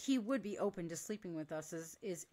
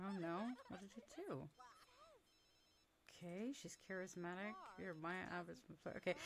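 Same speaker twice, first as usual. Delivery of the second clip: barely audible, very quiet, under-the-breath mutter; 13 dB quieter than usual. Checking outfits and options, the speaker is muttering to herself. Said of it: "sorry, I'm muttering".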